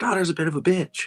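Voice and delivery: soft whisper under the breath. Speaking in character to Balthazar about his daughter: whispering. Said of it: "he whispers to Balthazar".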